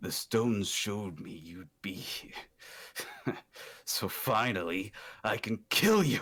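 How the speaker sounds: smug, smirking villain voice. Voicing a stone-masked figure stepping out to confront the party: smirking villain. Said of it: "coming around this corner and just smirks".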